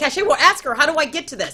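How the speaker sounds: put-on excited calling out.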